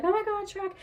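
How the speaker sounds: very high, terrified, scared shout. Retelling a scared crossing of a bridge: shouting as Donkey from Shrek.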